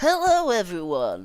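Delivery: presenter-style voice. Right after saying you hate Phil's YouTube voice, imitate it: Phil's YouTube voice. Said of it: "I hate Phil's YouTube voice".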